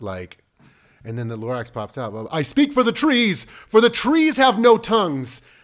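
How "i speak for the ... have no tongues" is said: very high, loud, declaiming proclamation. Showing how the Lorax is voiced when reading aloud: Lorax voice, like on a soapbox. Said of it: "have him come out".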